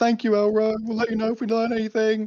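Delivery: clumsy, awkward, high-pitched yell. A player's character calls thanks to elro while walking away, awkward yelling. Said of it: "awkwardly yelling like".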